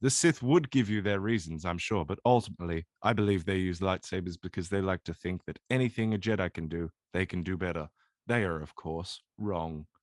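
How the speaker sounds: flat, even monotone delivery. Discussing why the Sith use lightsabers, in a monotone voice. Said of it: "I'm thinking more of the monotone".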